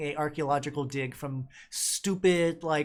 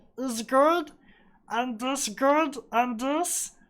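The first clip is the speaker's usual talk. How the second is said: very high, dopey, cartoony creature voice; 10 semitones higher, 4 dB louder than usual. Showing the way they speak, in a stupid cartoony voice. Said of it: "put on my best like uh, stupid uh, cartoony voice".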